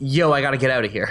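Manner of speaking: ordinary talk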